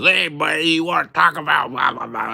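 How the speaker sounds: put-on rough, very loud, high, shrill drunken talk. Acting out a stranger who approaches in public: imitating a drunk person. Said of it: "an idiot drunkenly stumbles up to you and says".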